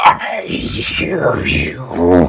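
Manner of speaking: gurgling, breathy, half-whispered hushed voice. Narrating a game, a wounded character answers before charging: gurgled voice. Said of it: "you hear a gurgled".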